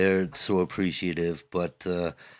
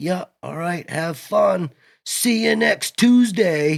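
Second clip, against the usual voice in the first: very high, loud shouted holler; 13 semitones higher, 8 dB louder than usual. Retelling how Ryan called out across the mud flats: imitating Ryan hollering. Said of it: "Ryan hollers out across".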